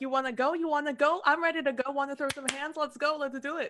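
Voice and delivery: put-on tough New York accent. Voicing a friend pictured as a little New Yorker, mock-tough New Yorker voice. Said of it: "Found her voice".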